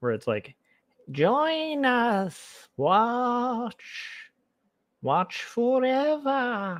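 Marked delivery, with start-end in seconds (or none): 1.1-6.8 very high, very slow, evil tempting voice. A streamer talks to a viewer in his evil voice on the shoulder. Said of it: "I hope you like my evil voice on the shoulder voice".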